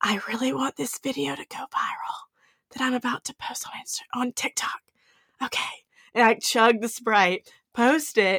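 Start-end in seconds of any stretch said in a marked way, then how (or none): 0.0-5.6 soft, hushed whisper under the breath. Retelling holding a cup of Sprite beside other people before posting, retelling own whisper.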